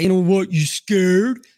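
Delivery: loud, swaggering, braggart tough-guy voice. Retelling how a man at an ATM suddenly taunted: imitating a tough guy. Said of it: "he was playing tough guy".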